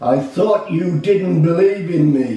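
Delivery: heavenly, divine voice calling down from on high. Speaker retells crying for help at the monster and God answering, big booming voice. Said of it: "this big booming voice came down and said".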